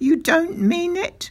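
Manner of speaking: very high, gleeful, hooting exclamation. After a whispered talk with the narrator's father, the doctor responds, crying out. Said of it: "he cried".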